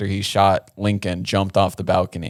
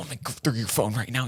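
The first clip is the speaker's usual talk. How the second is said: whisper-shout, hushed but hard; 4 semitones higher, 8 dB quieter than usual. Retelling a couple's fight on a plane: imitating someone whisper-yelling. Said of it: "whisper yelling".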